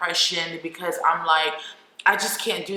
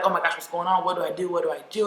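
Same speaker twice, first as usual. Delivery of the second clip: put-on hysterical panic, faster. Retelling the brother's reaction to seeing blood everywhere; imitating brother's hysterical panic. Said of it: "My brother was like hysterical".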